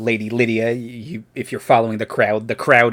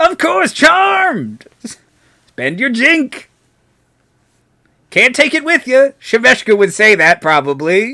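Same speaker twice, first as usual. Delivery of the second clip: very high, swooping speech, laughing through the words; 13 semitones higher, 7 dB louder than usual. Voicing a laughing head welcoming visitors in, laughing while talking. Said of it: "he laughs".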